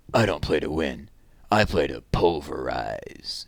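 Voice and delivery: low, slow, rough, gravelly voice. Reading a story where a boy stands tall and answers: gravelly voice. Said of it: "said in that gravelly voice that all the boys imitated".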